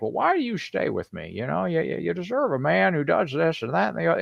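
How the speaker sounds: put-on, thick, old-school movie voice. Retelling a movie scene, a man's line: James Stewart impression. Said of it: "my best impression of, uh, James Stewart".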